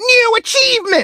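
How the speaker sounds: mock booming, shrill, very high, loud, thrilled AI announcer. Quoting the audiobook's AI announcing an achievement, mock-enthusiastic announcement. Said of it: "the A I does it with such enthusiasm that it goes like".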